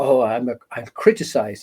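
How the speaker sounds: plain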